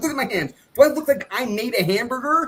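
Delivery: very high, shrill, yelled-out, acted delivery. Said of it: "yelling at that".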